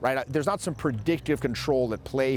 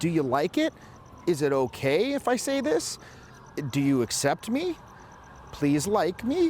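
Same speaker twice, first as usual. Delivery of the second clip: each phrase lilting upward like a question; 4 semitones higher than usual. Describing how a man talks, the speaker imitates his questioning tone. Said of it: "got this questioning tone where it's like".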